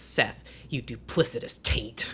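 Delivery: whispered, breathy taunting tone. Quoting a scene where the actor insults a character: imitating Danny McBride. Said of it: "and he goes".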